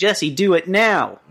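slow, loud, mock enthusiastic eager delivery.

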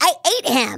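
high, squeaky, deranged hamster voice. A voice actor describes playing her hamster character in the booth, Nibbles the deranged hamster voice. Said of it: "she's a deranged hamster".

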